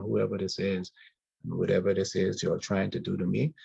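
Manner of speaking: ordinary talk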